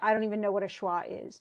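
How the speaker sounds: usual speaking voice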